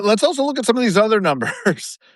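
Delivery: amused speech through laughter.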